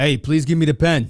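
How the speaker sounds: put-on tough, streetwise New York accent. In a listening exercise, asked to say the line like a tough New Yorker. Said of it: "say it like a tough New Yorker".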